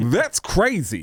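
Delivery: sultry, worked-up, horny-sounding delivery. Showing the phrase that starts a comedian impression: Tracy Morgan impression. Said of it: "someone like Tracy Morgan".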